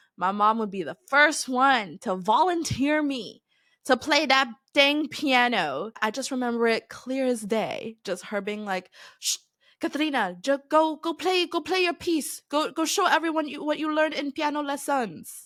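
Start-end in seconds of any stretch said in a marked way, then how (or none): 9.2-15.3 bad put-on Filipino accent, pitched up. Remembering your mom volunteering you to play piano, quoting her in a shitty filipino accent. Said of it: "My shitty Filipino accent".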